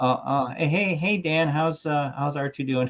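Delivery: halting, stammering voice. Retelling a coworker's joke about forgetting names: George Lucas impersonation. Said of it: "George Lucas impersonation".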